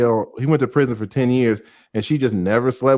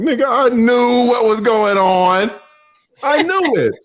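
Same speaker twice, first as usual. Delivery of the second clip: put-on high-pitched, slow words through laughter; 11 semitones higher, 3 dB louder than usual. Retelling a joke about a sewer first date, imitating Joy laughing while talking. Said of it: "Joy over there laughing like".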